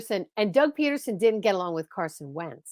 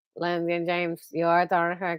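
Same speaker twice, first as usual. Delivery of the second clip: lower-pitched, put-on robotic monotone; 4 semitones lower, 3 dB quieter than usual. Greeting Langdon James, whose name you haven't seen lately, in a Stephen Hawking impression. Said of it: "I'm doing my Stephen Hawking impression".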